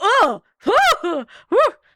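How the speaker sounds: overwhelmed gasping, high, loud and breathy.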